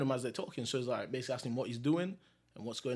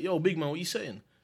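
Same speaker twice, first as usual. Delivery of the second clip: put-on loud calling out; 4 semitones higher, 3 dB louder than usual. Recounting a college acquaintance calling out to him, retelling a shout. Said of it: "he just shouts at me".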